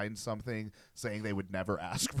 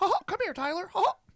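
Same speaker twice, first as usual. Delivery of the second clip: very high, loud, squeaky voice; 6 dB louder than usual. Imagining a man stuck sounding like Mickey Mouse disciplining his kids: Mickey Mouse voice. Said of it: "Imagine like, after that trying to discipline his kids".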